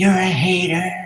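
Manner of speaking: high-pitched, slow screaming. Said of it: "she's screaming at me".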